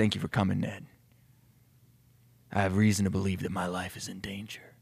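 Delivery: put-on deep, grizzled old police chief voice. The chief speaks to ned, who just walked in, in a deep, grizzled police-chief voice. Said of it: "Now he's like the deep, grizzled police chief".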